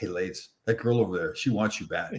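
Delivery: low, soft, hushed tone.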